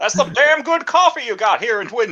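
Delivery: put-on nasal voice. Trying again, an impression of David Lynch. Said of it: "How does he sound like again?".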